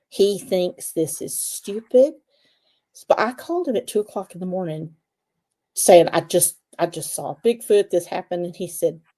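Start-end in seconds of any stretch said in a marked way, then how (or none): none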